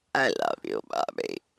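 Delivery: very low, creaky, drowsy mock voice. Quoting what she said to Bobby, imitating a tired little voice. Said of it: "that little I'm so tired voice".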